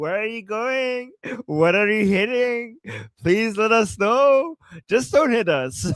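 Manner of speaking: put-on light, funny, joking, playful delivery. Retelling how a man spoke to a passing missile: imitating a joking tone. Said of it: "in, like, a joking, funny way".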